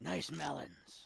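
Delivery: put-on rough mafia boss voice. Voicing the store character Gus flirting: rough voice for Gus. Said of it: "Was that the impression I did last time?".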